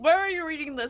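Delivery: calling out loudly. Calling up to a player above in an echoey chamber: projecting voice. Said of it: "I will project my voice and say".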